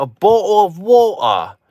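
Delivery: put-on very high, drawn-out British accent, T swallowed in "bottle". At a bar, retelling a woman's reply: imitating T-dropping UK accent. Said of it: "They didn't pronounce the T at all".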